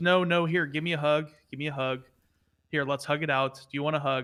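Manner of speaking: ordinary delivery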